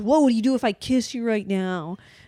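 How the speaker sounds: heated, argumentative tone, mid-fight intensity. Retelling the end of a couple's big, awful fight, quoting him: mock fighting tone. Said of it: "in the fighting tone".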